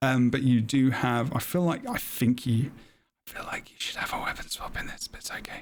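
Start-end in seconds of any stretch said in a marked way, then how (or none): 3.3-5.6 quick, very quiet whispered aside. Discussing an engineer build, speaker drops into an aside, whispering. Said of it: "I don't know why I'm whispering that".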